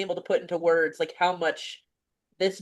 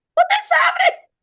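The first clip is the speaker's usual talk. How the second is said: very high, tearful, near-tears crying outburst; 7 dB louder than usual. Talking about a book similar to her own story: tearful, on the verge of tears. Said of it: "I'm tearing up now".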